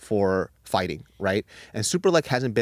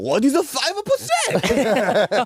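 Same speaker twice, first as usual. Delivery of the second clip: put-on Japanese accent, higher and louder; 14 semitones higher, 4 dB louder than usual. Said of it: "that's a really good Japanese accent".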